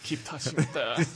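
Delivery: attempted French accent. Playing Gerard urging someone to touch the robot: Gerard in a bad French accent. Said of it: "I don't know how to do a French accent".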